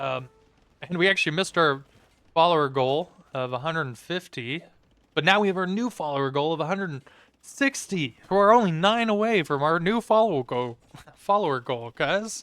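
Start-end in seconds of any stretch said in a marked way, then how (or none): 8.3-12.4 clearly sarcastic, tongue-in-cheek delivery. Announcing how close the new follower goal is: sarcastic delivery. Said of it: "that's sarcasm, if you're new to my voice".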